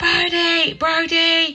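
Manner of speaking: very high, full-voice screaming at the top of the lungs. Speaker retells running around the estate calling brody, reenacting screaming at top of voice. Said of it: "screaming, top of my voice going".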